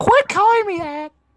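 very high-pitched, forceful outburst. Imitating how Tyler will react to a nickname: imitating Tyler. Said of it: "he's gonna be like".

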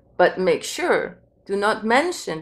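plain

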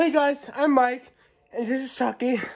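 loud, winded, out of breath, puffing. Greeting the viewers at the start of the video: out of breath. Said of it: "I'm on a breath".

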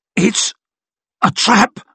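very high grunt through gritted, clenched teeth. A nervous man double-crossing two thieves speaks up; grunted through clenched teeth. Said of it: "he grunted through his clenched teeth".

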